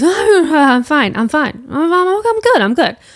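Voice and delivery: slow, halting, high, insistent mumble. Retelling an injured man's reply when asked if he is okay: imitating a mumble. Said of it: "he just mumbles and goes".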